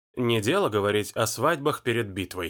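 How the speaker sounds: ordinary delivery, nothing marked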